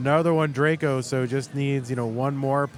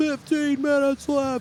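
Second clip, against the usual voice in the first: very high-pitched hollering yell; 13 semitones higher than usual. Describing how things went when Dorian was up here, imitating Dorian yelling. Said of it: "he would be yelling like".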